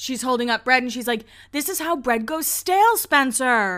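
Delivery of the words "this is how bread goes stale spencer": mock exasperated, imitated scolding yelling tone. Retelling a scene where one sibling scolds her brother over bread: imitating someone yelling. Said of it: "she's yelling at Spencer".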